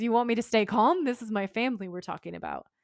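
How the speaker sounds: plain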